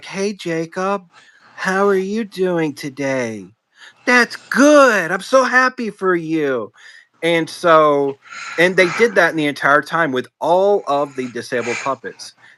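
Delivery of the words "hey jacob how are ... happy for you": put-on high, slow, patronizing talking-down voice. Retelling how puppets greeted a puppet in a wheelchair: imitating talking down as to a child. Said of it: "pandering to them in a way like they would speak to a child".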